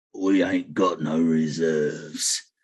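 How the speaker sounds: very deep, very low, slow, dragged-out growling voice. Voicing a voice from behind the captain: growling voice. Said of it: "a voice growls out from behind the captain".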